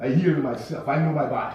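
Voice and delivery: put-on strong West Indian accent. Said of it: "in that strong West Indian accent".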